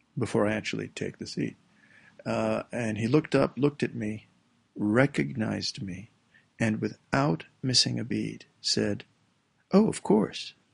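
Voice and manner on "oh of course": mock gloating tone, higher pitched. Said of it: "the tone of voice that he used".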